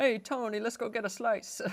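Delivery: New Jersey Italian accent. Acting out the New Jersey Italian stereotype, use a New Jersey Italian accent. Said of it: "New Jersey Italians, like that is the stereotype".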